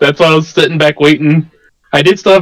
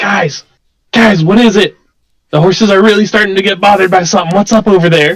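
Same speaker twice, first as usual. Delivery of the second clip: whisper delivered with the force of a yell; 4 semitones higher than usual. A player in a tabletop game calling to the party, whisper-yelling. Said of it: "I'll just kind of like whisper, yell".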